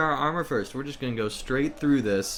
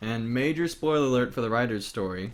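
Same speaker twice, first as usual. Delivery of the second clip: ordinary talk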